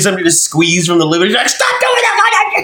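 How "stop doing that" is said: high-pitched, slow, drawn-out mock yell. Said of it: "she's all yelling at you".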